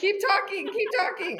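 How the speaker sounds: high, loud, urgent voice.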